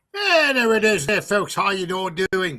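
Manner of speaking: failed Irish accent drifting into English. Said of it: "It's more like an English accent".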